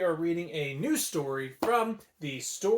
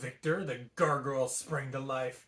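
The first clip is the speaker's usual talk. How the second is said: ordinary talk, nothing marked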